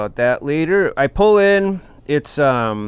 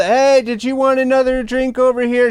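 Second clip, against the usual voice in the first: mock high, loud yelling; 10 semitones higher than usual. Retelling how the drunk bartender acted during the show: imitating a yelling bartender.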